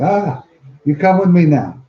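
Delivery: put-on very Filipino accent throughout. Retelling what a jungle survival instructor said, in a very filipino accent. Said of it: "in a very Filipino accent".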